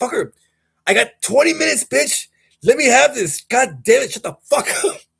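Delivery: furious, fed-up outburst, very high and strained. Retelling kicking a dog off the bed: imitating himself getting pissed. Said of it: "I'm getting pissed".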